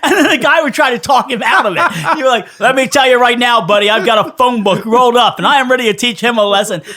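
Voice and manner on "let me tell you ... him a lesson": harsh, threatening, stern father voice. Retelling a crank call, imitating Dave posing as a father. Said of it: "Dave would go into, like, basically how he was gonna punish his son".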